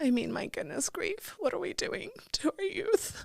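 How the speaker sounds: high, tearful, whispered sobbing.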